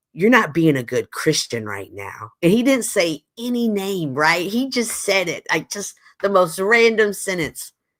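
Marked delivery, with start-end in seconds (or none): 0.2-2.3 stern, manly voice, laying it down. Retelling what a man in a cowboy hat said, in his stern manly voice. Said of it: "in his his sternly manly voice says".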